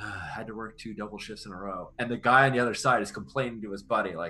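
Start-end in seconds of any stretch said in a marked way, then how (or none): 0.0-1.9 muttered quietly under breath, quieter. Playing a character timing an ambush, muttering under breath. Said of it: "I say under my breath".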